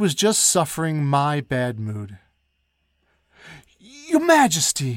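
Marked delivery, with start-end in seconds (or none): 3.8-5.0 stumbling, very high-pitched stutter. A duke finally speaks up to Her Majesty in a rush, stammering. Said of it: "stammered the Duke".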